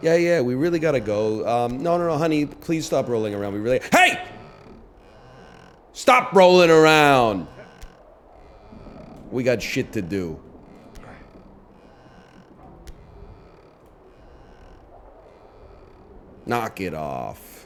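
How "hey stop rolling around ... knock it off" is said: measured, unhurried father voice. A parent tries to get a child to stop rolling around; dad voice. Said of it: "my dad voice".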